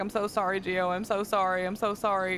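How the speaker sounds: mock tearful crying, repeated over and over. Speaker retells apologizing to Gio after freaking out: retelling a tearful apology. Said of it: "I start crying and I start apologizing".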